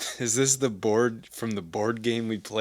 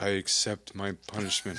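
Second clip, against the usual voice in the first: play-acted solemn, somber, grave delivery; 3 semitones lower, 5 dB quieter than usual. Retelling a cartoon scene, quoting Patrick: somber Patrick voice. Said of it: "first he says something that's very, like, very, like, um, I don't know, somber".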